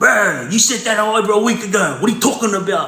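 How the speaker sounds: put-on climbing, heated voice. Retelling a man's argument with Salim, imitating him raising his voice. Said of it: "the Middle Eastern guy's voice started coming up".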